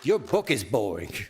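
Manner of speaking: put-on low New York accent, scornful. The speaker quotes what a woman said to him, new york accent. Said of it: "with a New York accent".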